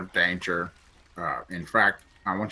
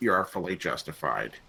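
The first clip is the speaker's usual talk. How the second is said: ordinary talk, nothing marked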